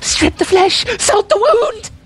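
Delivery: very high, crazy-sounding voice. Quoting the bandits' commentary from a game: Psycho Bandit voice. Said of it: "As in the Psycho Bandits?".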